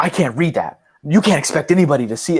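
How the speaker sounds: high, angry, irate complaining tone. Retelling a customer's complaint about the receipt: imitating an angry customer. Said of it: "the guy was getting so mad at me".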